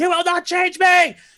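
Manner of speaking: screaming defiantly. His character is being shot at and pushes back against the fire: screaming defiantly. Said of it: "this is the moment where he's screaming".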